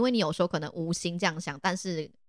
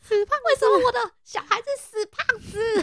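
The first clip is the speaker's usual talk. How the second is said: very high, loud, shrieking shrill yell; 6 dB louder than usual. Picturing a mother from a story yelling at her child, imitating a mom shouting. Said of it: "妈妈就是大喊说".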